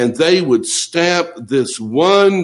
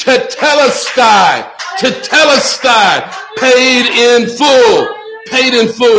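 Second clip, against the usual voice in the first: loud, high, ringing, victorious triumphant cry; 9 semitones higher, 5 dB louder than usual. Retelling how he cried out, not like in the movies: a loud cry. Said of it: "With a loud cry, he cried".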